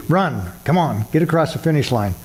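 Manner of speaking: normal talking voice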